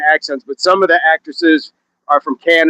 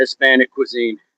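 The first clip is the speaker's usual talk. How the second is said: ordinary talk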